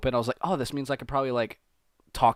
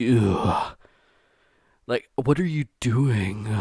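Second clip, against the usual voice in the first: flat, guttural voice; 3 dB louder than usual. Describing a narrator's way of ending words: Mister Creeps impression. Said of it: "he ends everything like".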